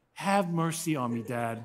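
slow, begging, pleading delivery. Retelling a son kneeling to beg, imitating a son's pleading. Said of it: "Got on his knees".

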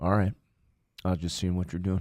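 telephone speaking voice. Acting out a phone call with a younger brother: imitating McGee on the phone. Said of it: "the phone conversation McGee sounds a little bit like this".

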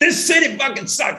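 acted-out top-of-the-lungs scream, very high, fast, shrill. Retelling a man screaming after he couldn't get a cab, retelling a man screaming. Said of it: "he's just screaming at the top of his lungs".

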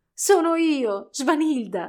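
words breaking through laughter, high and loud. The doll turns toward the man watching her: bursting out laughing. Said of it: "scoppiò a ridere".

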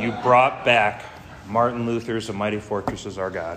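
choked-up voice, catching with emotion. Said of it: "I get emotional when I read that last line".

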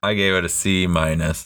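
plain

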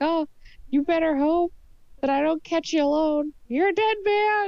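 high, screamed delivery. Voicing a character being led away, threatening a man: screaming a threat. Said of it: "just scream out to him as she's being led away".

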